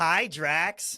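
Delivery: called out loudly. Quoting a movie scene where a character greets Drax: imitating Mantis. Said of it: "Mantis walks out".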